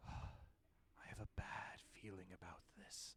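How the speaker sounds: soft, hushed whisper. Game master voices what a player hears inside their head: soft voice in your head. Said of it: "soft voice um inside your head that says".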